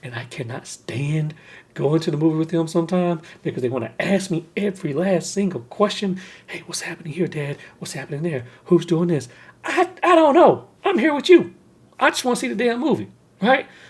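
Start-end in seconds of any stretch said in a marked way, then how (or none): 0.0-6.2 hushed whisper, much quieter. Confessing something his wife and kids can hear, whispering. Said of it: "I'm only whispering this".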